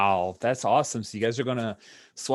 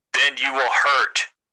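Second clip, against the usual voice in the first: growled creature speech, louder; 3 semitones higher, 7 dB louder than usual. Voicing a Wookiee warning a player: growling Wookiee voice. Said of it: "Another growl".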